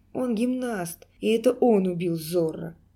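ordinary delivery

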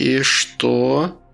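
whispering. Reading the grandmother asking a question, whispered question. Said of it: "шепотом спросила бабушка".

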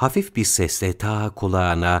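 ordinary delivery

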